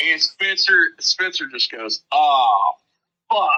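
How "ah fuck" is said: play-acted, sudden, really loud, blurted-out shout. Retelling how the bass player suddenly cursed during a drive: imitating a loud curse. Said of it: "like, really loud".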